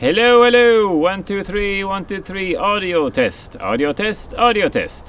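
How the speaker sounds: loud, very high, projecting voice. Doing an audio test into a microphone: speaking loudly. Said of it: "So now I'm speaking loudly into the N T G five".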